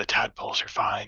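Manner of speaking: quiet, hushed whisper. In character, passing another character and telling him something, whispering. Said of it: "I'll like whisper".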